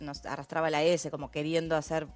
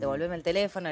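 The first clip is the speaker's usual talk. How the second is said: normal talking voice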